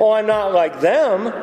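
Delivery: ordinary delivery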